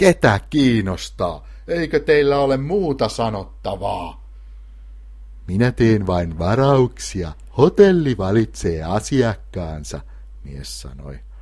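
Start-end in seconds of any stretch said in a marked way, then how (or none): 0.0-4.2 angry, appalled, high-pitched temper-lost outburst. Kl to the hotel man, outraged that the gift was returned; losing temper. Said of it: "oli pöyristynyt lahjan palauttamisesta ja menetti malttinsa".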